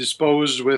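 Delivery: plain reading voice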